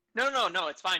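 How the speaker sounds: high, loud, mock breezy tone. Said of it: "people were like".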